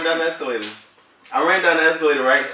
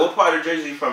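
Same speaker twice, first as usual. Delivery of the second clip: ordinary delivery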